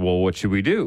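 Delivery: normal talking voice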